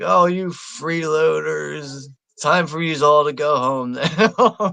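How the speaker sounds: slow, deliberate, drawn-out, dismissive drawl. Retelling what Bruce Wayne says to his party guests: imitating Bruce Wayne. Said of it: "Bruce Wayne's like".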